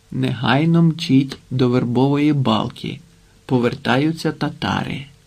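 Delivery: ordinary delivery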